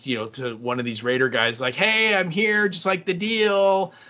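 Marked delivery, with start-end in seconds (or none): 1.7-3.9 put-on high raised yell, "deal" stretched out. Retelling a woman getting out and calling to the raiders, imitating her yelling. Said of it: "she starts yelling".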